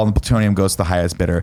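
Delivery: ordinary talk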